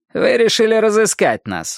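sneering, derisive, mocking finish. A narrator reads a man finishing a woman's sentence, mocking. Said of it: "насмешливо закончил Вуди".

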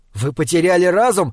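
usual speaking voice

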